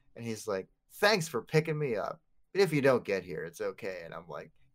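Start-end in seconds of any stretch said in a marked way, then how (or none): 1.0-4.0 put-on polite, well-mannered little kid voice. Telling about gaming with a kid, the speaker imitates the polite kid. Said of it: "He's a very polite first-person shooter player".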